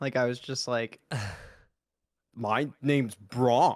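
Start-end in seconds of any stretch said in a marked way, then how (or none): 2.3-3.8 dim-witted goof voice, dumb, slow, drawn-out drawl. Speaker voices a character named Bronk: Kevin from The Office voice. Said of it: "make him uh sound like like I was kind of going for like Kevin from The Office".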